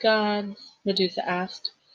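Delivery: ordinary delivery, nothing marked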